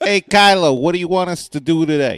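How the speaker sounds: New York accent laid on thick. Joking about characters who just stand in frame, in a heavy new york accent. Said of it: "like a heavy New York accent".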